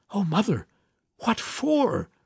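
gasped out on a sharp breath, pitched high. Narrator reads a daughter answering her mother's orders: gasping. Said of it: "gasped Nanny".

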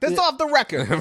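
put-on Jersey-style accent. Quoting what a man said about his conversation with a magazine reporter, in a Guido accent. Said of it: "meant to be said in like a Guido accent".

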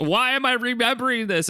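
very high-pitched, shrill, angry scream. Retelling a scene where Scott stands up: imitating Scott screaming. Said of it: "Scott stands up and screams".

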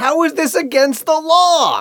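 put-on slow high shout. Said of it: "And then he yells".

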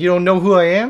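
loud, play-acted offended, indignant tone. Retelling how a friend answered a lady at the ferrets: imitating an indignant reply. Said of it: "the way you said it was like".

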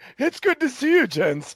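put-on high-class American accent. Mocking high-class bougie Americans, the speaker imitates their upper-class American accent. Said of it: "they talk with that, that accent".

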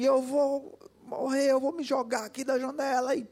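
frantic acted yell of despair, high-pitched. Retelling what a boy shouted through the house, imitating a boy shouting. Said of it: "E aquele menino gritando na casa, gritando assim".

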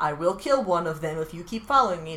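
ordinary delivery

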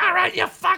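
very high, shrill yelling, pitched way up. Imagining a new Discovery host arriving and yelling at everybody: Sam Kinison yelling impression. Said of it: "He'd show up like Sam Kinison and just be like".

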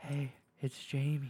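slightly voiced whisper. Describing the ASMR he likes, demonstrating a little more than a whisper. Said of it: "they get a little more than a whisper".

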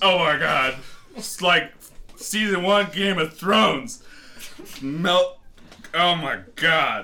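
put-on drunken, panicked, rambling delivery. In a sketch, the drunk groom reacts as the rings melt, drunk. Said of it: "Eric, are you drunk? Of course I'm drunk".

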